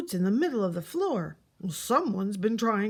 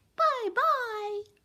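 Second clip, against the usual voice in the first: squeaky voice, much higher pitch; 14 semitones higher than usual. Reading a story, an unseen voice calls goodbye to her: high squeaky voice. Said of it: "and a high squeaky voice calling to her".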